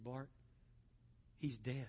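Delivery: dead-serious, grave, solemn, hushed acted-out delivery. Retelling Gary's answer when asked how a young man was doing, very serious tone. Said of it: "in just the most serious tone".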